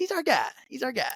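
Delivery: uncertain New York accent, pitched very high. Trying the line again after being pushed for the accent: attempted New York accent. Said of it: "Whatever accent this is".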